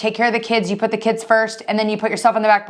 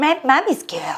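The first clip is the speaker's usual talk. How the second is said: put-on weird mommy-style baby-talk voice; 4 semitones higher than usual. Retelling how a mother talks to her daughter: imitating someone's baby talk. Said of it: "She does this, like, weird talk".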